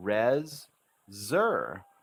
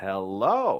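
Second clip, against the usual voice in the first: "hello" with lifted intonation, said louder. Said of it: "Now we add the intonation".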